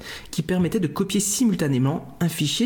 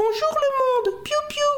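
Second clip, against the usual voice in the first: tiny cartoon chick voice, much higher. Recounting a cartoon chick hatching from an egg, in a tiny chick voice. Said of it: "en rajoutant des piou piou et sa petite voix".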